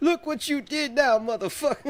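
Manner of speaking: put-on Southern accent, pitched very high. Retelling what a man says climbing out of his burning car, southern accent. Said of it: "that southern accent".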